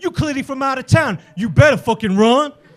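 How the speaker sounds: plain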